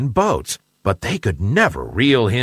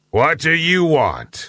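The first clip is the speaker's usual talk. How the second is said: threatening, villainous, menacing voice; 3 semitones higher than usual. A big fish answers a visitor at its cave door, in a menacing voice. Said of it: "Said the big bad fish in a menacing voice".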